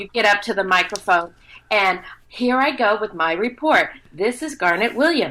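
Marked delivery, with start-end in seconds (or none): 2.3-5.3 rehearsed, school-age classroom book-report presentation voice. Showing how a beginning voiceover talent reads: imitating Garnet's book report voice. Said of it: "the best impersonation I've ever heard of Garnet".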